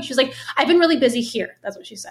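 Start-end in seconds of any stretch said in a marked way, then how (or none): 0.6-1.6 mock curt, snippy, defensive delivery. Retelling a coworker's answer to a friendly question: imitating a defensive, snippy reply. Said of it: "And how she said it".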